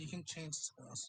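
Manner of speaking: whispered speech. Playing a character who leans into another's ear: whispering in character. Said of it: "I lean into your ear and whisper".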